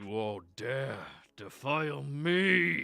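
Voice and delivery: thunderous booming voice, rising throughout, me long drawn-out. Narrating to the players, the game master gives the voice across the horizon: booming voice. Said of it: "all of you hear a booming voice across this horizon".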